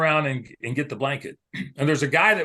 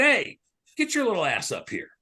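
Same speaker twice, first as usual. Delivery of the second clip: acted loud holler, high and swooping; 6 semitones higher than usual. An MC on stage retelling how he hollered at a young boy, imitating someone hollering. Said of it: "I hollered at him".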